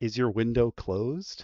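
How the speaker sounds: very low, hushed, under the breath. Player asking another character if her window is closed, in a very low voice. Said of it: "in a very low voice".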